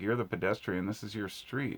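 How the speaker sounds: ordinary talk, nothing marked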